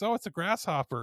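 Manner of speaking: put-on high woman's voice with Oklahoma accent. Retelling what a lady said to a man, in an Oklahoma accent. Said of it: "with her Oklahoma accent".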